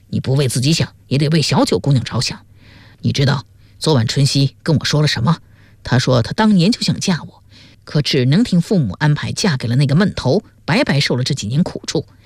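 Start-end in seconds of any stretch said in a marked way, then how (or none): none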